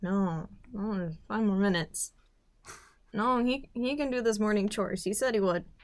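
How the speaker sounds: mock mumbling under the breath. Retelling a slow morning awakening, acting out mumbling to oneself. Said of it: "I even just kind of mumbled to myself".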